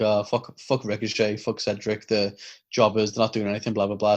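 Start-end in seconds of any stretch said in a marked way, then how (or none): none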